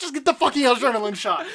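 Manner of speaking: loud, high-pitched yell. Retelling a movie scene where he yells at her to get the shot: imitating someone yelling. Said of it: "yelling at her".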